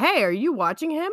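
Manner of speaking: high-pitched, loud yell. Speaker retells calling out to their boyfriend about the baby in the toy box, retelling a yell. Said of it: "I yelled to my boyfriend".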